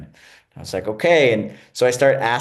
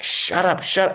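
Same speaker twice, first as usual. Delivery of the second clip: mock mounting anger, impatient, pitched-up angry outburst; 9 semitones higher than usual. Retelling being told to stop asking: imitating someone getting madder and madder. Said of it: "getting madder and madder".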